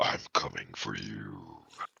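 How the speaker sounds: very low, slow, rough, creaky orc monster voice. Sending a message into his head, in a put-on orc voice. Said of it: "in the orc's voice".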